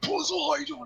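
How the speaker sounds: high-pitched battle scream.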